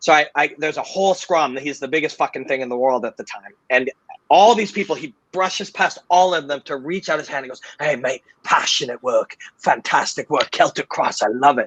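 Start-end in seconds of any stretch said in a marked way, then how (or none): 7.8-11.7 put-on Cockney accent. Recounting a star reaching past a crowd to shake hands, Connor impression, Cockney accent. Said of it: "from Cockney. He, Connor's not from London".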